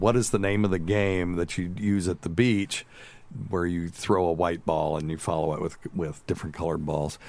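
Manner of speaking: usual speaking voice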